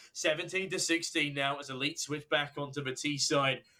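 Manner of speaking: ordinary talk, nothing marked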